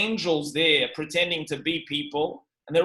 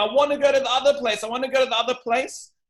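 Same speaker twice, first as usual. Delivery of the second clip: put-on scream, higher; 8 semitones higher than usual. Retelling how a man screams at approaching angels: imitating someone screaming. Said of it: "he's screaming at them".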